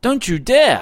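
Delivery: very high, shrill outcry. The wife jumps to her feet as the officer raises his hands at her husband, crying out. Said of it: "cried the wife".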